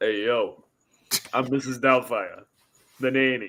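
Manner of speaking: put-on Italian accent, male. Continuing the impression segment after being told he sounds italian. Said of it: "you just sound like a, an Italian dude".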